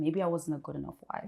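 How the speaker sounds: plain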